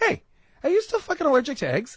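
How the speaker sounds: put-on very high, sing-song, swooping Boston accent. Retelling what an old friend, now a boston cop, shouted: imitating a boston accent. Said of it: "it sounds so good in that accent".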